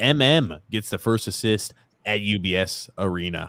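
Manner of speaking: ordinary delivery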